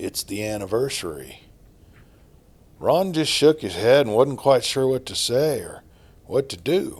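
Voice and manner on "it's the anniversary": put-on old man's soft, half-whispery voice. Narrator voicing an old man gripping Ron's arm, in an old, half-whispery voice. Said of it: "The old man continued in his old, whispery voice".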